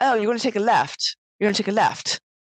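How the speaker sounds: put-on butchered English accent, rattled off quickly. Retelling an airport lady giving directions, in a bad English accent. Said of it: "I'm gonna butcher the English accent".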